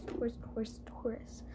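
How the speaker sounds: soft whispered delivery.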